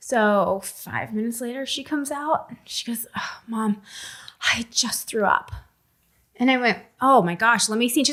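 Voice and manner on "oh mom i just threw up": whispered, slow, hushed, drawn-out voice. A mother recounts what her sick daughter told her, imitating her daughter. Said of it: "Your impression of her".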